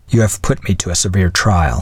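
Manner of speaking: plain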